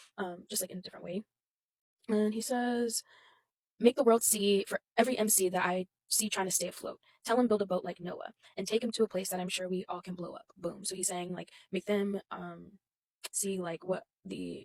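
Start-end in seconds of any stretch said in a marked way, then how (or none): none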